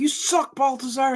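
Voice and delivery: acted-out high, angry yell. Quoting the angry critic who yells at the speaker: imitating an angry yell. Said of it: "he yells, man. He's the angry critic".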